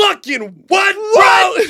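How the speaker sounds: very high, loud, stunned yell in disbelief.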